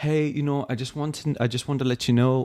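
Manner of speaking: put-on English accent. Retelling being pulled over, voicing the officer in a put-on english accent. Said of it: "I'm going into like an English accent".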